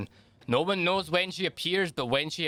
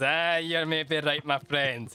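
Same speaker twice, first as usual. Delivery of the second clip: chuckling, giggly voice, giggling through the words. Voicing a tavern worker who looks at a player: acted giggling while talking. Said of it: "He kinda looks at you and kinda giggles".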